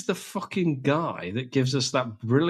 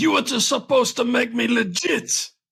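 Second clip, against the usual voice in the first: play-acted furious angry shout, very high pitch; 10 semitones higher, 5 dB louder than usual. Retelling a scene from a show, imitating an angry shout. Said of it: "So he shouts at him like that".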